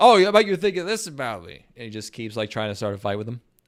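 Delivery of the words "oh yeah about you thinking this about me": put-on drunk voice, much higher. Retelling a drunk man trying to start a fight with another man, imitating a drunk guy. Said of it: "it's a very drunk drunk guy thing".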